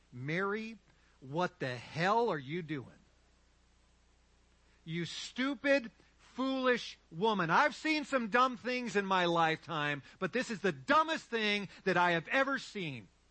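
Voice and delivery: slow, harsh, scornful, acted-out stern voice. Acting out the disciples rebuking a woman: imitating a harsh rebuke. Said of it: "They rebuked her harshly".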